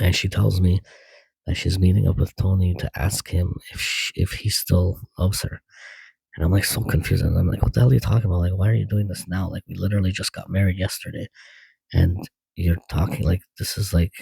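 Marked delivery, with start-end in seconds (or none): none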